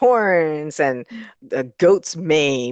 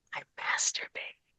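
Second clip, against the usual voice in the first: very soft, barely voiced whisper. Retelling a ninety-one-year-old's talk show answer: imitating Ernest whispering. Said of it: "He whispers to him".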